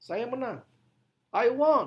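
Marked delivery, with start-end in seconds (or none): 1.3-1.9 emphasis landing hard on the word won. Explaining english stress patterns in indonesian, stress on won. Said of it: "Penekanannya pada kata won".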